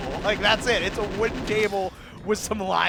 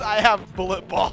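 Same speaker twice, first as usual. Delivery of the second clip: almost-crying voice, on the verge of tears; 3 dB louder than usual. Retelling a surreal moment, the speaker acts out a man facing the camera: imitating someone nearly crying. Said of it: "he's like practically crying and goes".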